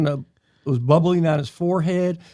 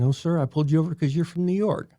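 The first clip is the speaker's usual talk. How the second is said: ordinary delivery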